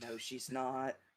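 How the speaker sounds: hushed, half-whispered aside. Playing a character who quietly denies another's boast: half-whispering. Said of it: "I just whispered".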